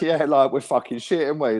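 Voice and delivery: high, sarcastic jeer with no hatred. Retelling how the fans mocked their own team: imitating sarcastic fans. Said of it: "it was so sarcastic".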